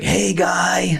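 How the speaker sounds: rough, gravelly voice. Retelling how he used to greet the speaker on walking into the room: raspy smoker's voice. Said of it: "He had this raspy smoker's voice".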